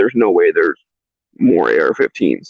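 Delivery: ordinary delivery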